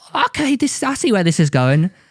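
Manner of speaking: exaggerated put-on British accent, high and swooping. Retelling a confrontation with a man who told him to leave, exaggerated British accent. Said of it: "Did you just make your accent sound more British?".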